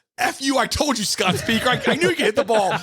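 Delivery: high, laughing, gloating proud yell.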